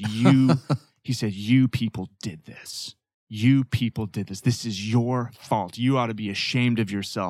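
put-on crying male voice. Retelling a man in tears blaming their church, retelling a tearful accusation. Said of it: "he's got tears running down his eyes".

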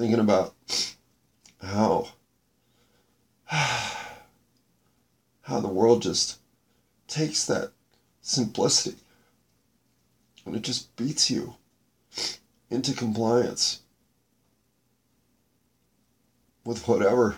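breaking voice, slow, halting, choked up, holding back tears. Reflecting on how the world beats simplicity out of you, choking up. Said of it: "I'm really trying not to lose it right now".

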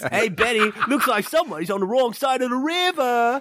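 put-on Australian accent. Imagining a famous movie adventurer as someone else: Steve Irwin voice. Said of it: "picturing Steve Irwin as, like, Brendan Fraser's character".

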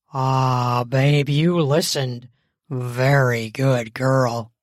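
very low, deep, approving, appreciative tone. Narrating a story, a man speaks to Dana as he approaches; deep, appreciative voice. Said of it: "His voice was deep and appreciative".

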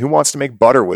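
put-on street hawker's call-out voice. Retelling hearing a guy at a rally call out: imitating a guy yelling. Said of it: "I hear this guy yelling".

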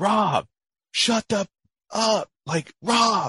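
shrill, very high, drawn-out screaming. Retelling a radio call to a talking pilot: imitating someone screaming. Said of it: "just screaming at him".

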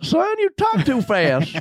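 put-on slow old prospector voice. Retelling what someone told him after getting off stage, slow old prospector voice. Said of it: "some old prospector? ... very Slow".

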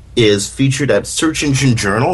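normal talking voice

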